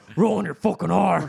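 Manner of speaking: gravelly, creaky fake voice. Doing an Alex Jones impression for friends: Alex Jones voice. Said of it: "Is it the Alex Jones voice?".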